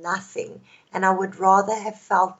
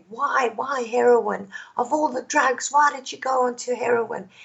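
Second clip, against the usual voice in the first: mild, half-shouted yelling; 4 semitones higher than usual. Retelling what a mother asked about heroin: imitating mother screaming. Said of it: "she was screaming at me and she said".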